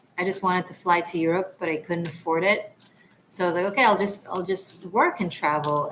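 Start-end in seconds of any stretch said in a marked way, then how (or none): none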